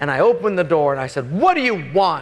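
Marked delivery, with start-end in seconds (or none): 1.3-2.2 sharp, pitched-up, irritated, fed-up angry snap. Retelling getting out of bed mad and opening the door: retelling an angry snap. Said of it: "But with that tone".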